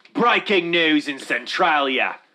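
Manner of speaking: slow, high, put-on Australian accent. Joking about local breaking news: put-on Australian accent. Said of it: "I just wanna talk in an Australian accent".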